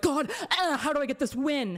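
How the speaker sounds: put-on desperate, pleading, begging voice. Mocking someone as desperate for a win: imitating a desperate plea. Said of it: "So desperate".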